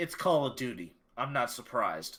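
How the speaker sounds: matter-of-fact, flat, dry deadpan. Asked whether gamers are getting cheated, answering with a deadpan delivery. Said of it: "I was saying that as a deadpan delivery".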